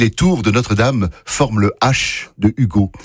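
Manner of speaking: normal talking voice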